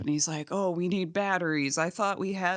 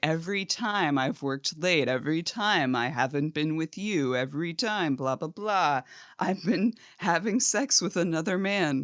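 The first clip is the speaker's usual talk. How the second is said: plain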